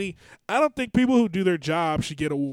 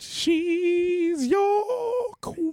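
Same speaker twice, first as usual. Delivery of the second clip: voice breaking and cracking, very high; 13 semitones higher than usual. Telling another speaker who their queen is: voice cracking. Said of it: "My voice is fucked up".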